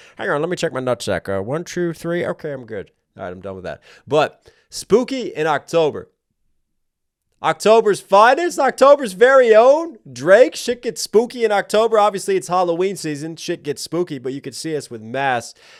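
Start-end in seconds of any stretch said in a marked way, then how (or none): 0.2-2.9 campy villain voice. Joking around, the speaker slips into a Doctor Evil voice. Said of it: "Feel like Doctor Evil voice".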